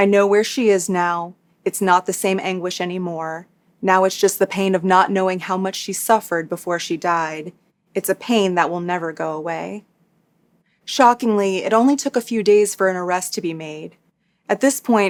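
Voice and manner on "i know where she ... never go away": normal talking voice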